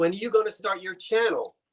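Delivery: ordinary talk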